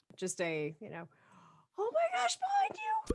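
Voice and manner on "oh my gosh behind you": put-on squeaky voice, pitched much higher. A player's character warns Karina of an attacker creeping behind her, high-pitched squeak. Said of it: "you hear this like kind of squeak".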